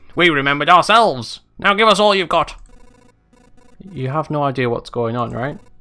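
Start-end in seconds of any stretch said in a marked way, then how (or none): 0.2-2.6 high, loud put-on goblin voice. Speaker voicing characters, trying out a goblin voice. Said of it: "I'll try and do a goblin voice".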